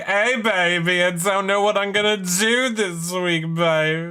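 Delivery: slow, stretched-out, high drawl. Imitating a houseguest's confessional said to sound like Austin Powers: imitating Bowie Jane. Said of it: "she's like".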